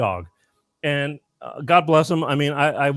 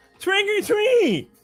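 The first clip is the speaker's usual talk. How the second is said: put-on speech impediment, much higher pitch. Telling a story, a man voices a trick-or-treating boy, imitating cleft palate speech. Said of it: "he kind of talked like this".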